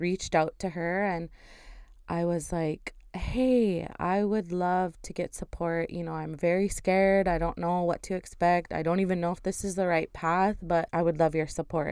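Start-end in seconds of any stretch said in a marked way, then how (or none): none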